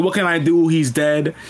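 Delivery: ordinary delivery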